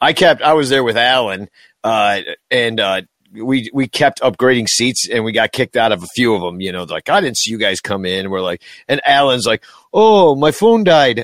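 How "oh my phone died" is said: terrible fake Irish accent, much higher, slower. Speaker retells Alan getting caught upgrading seats, terrible Irish accent as Alan. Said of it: "That's a terrible Irish accent".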